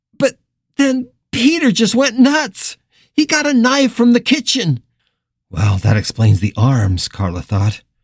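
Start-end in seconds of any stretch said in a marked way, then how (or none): 0.2-4.8 very high, frantic, near-hysterical voice. The nurse keeps talking to Carla on the stairs: on the edge of hysteria. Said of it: "She was on the edge of hysteria".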